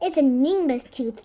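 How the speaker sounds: plain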